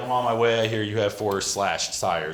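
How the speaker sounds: ordinary talk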